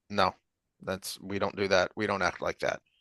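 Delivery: soft, quiet but firm tone. Retelling how Logain corrects his group: quiet, firm Logain voice. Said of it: "he just very quietly tells them".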